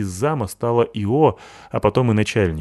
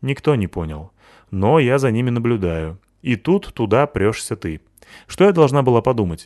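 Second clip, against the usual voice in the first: ordinary delivery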